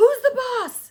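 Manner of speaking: shrill, very loud, high-pitched yelling scream. Retelling how dad stood up in the pirate boat, retelling a loud scream. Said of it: "my dad just stands up in the pirate boat and screams".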